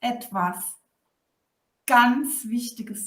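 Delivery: short pause just before the word "ganz". Showing how to pause when saying something important: pause before ganz. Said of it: "ich habe vor dem ganz so eine Pause gemacht".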